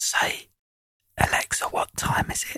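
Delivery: soft, breathy whisper. Giving an example command to smart speakers: whispering. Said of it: "I'm gonna whisper it".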